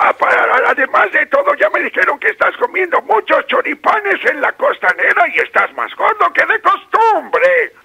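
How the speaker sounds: put-on creaky old man voice, pushed way up high.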